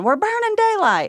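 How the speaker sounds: mock high-pitched yelling. Speaker retells what he yelled at a house full of women, imitating someone yelling.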